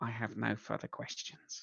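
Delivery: soft, hushed, gentle, almost affectionate murmur. Game master voicing Crack to the players, in a gentle, almost affectionate tone. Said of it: "almost affectionate tone of voice".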